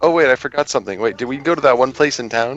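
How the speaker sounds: put-on forgetful, bluffing tone. Voicing Sora bluffing the others: bluffing. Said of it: "Sora bluffs everyone and tries to bluff".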